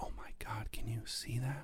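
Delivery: soft, very hushed, breathy whisper, barely voiced. Retelling first seeing the Grand Canyon: imitating a whisper. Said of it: "you sort of just kind of whisper".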